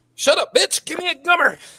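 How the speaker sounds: top-of-the-lungs scream, very high and shrill. Retelling a friend yelling from a car window: imitating a friend screaming. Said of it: "he just screams at the top of his lungs".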